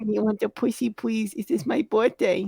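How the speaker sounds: put-on begging tone. Acting out a husband having to beg his wife: mock begging. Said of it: "having to beg his wife".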